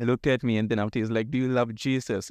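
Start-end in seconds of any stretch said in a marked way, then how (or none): 1.3-2.3 put-on mild but loud called-out delivery. Retelling the stranger's question asked in front of everyone: imitating a loud question.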